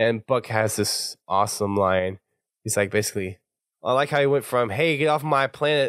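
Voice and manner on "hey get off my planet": bad, weak attempt at country-boy accent, higher pitched. Retelling a character's line to the others, bad Buck country accent. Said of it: "I didn't do a very good country".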